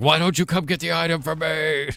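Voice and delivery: mock, high, screaming, demanding yell. Retelling what a muted player screamed at him, retelling someone screaming. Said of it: "he was like screaming like".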